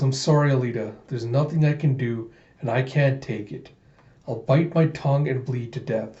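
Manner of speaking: usual speaking voice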